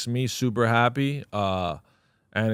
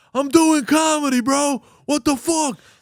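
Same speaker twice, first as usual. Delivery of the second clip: acted angry yell, higher and louder; 7 dB louder than usual. Retelling yelling at a worker mid-set: imitating own past yelling. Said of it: "I'm there yelling".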